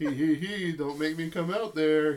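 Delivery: loud, giggling, teasing voice. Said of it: "he says".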